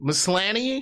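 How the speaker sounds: doubtful tone with a rising end.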